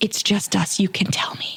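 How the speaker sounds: mock whispered voice. Retelling how strangers in the store ask about business: imitating a whispering customer. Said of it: "whispering to me".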